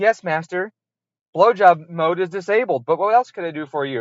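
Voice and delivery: dutiful, servile digital car voice assistant. Picturing a car that answers by voice: imitating a car's voice assistant. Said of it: "and she's like".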